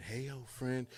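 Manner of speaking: put-on computer voice whispering. Describing a work computer left in sight, voicing it whispering to its user.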